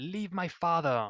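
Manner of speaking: piercing, very loud, high shriek. Voicing an illusion of Irena screaming over and over: screaming as Irena. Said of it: "she's, like, screaming".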